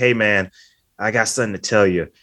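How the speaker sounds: normal talking voice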